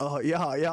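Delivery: floundering, fumbling speech, lost for words. Mocking a guy in a clip who did not know what to say: mocking someone lost for words. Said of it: "that guy literally did not know what the fuck to say".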